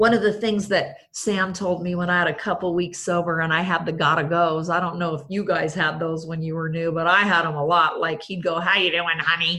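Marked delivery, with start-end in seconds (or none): 8.6-9.6 put-on small, little voice of an old-timer. Retelling what Sam would say when she was newly sober: imitating Sam's little voice. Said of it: "with that little voice that those old timer guys had".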